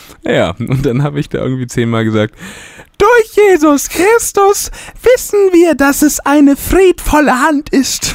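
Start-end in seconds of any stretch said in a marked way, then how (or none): 3.0-8.1 very high, exaggerated falsetto head voice. Retelling being asked to speak a line in head voice: high head voice. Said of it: "diesen Satz zu sprechen in Kopfstimme".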